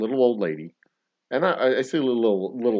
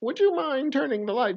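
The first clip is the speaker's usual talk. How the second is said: very high, witchy fairy-tale crone voice. Retelling how a woman spoke to you, mocking her witchy voice. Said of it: "Because she had that voice".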